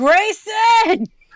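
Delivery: very high-pitched shout. Voicing Hawk calling out for Grayson: Hawk yelling. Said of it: "Hawk is gonna yell and be like".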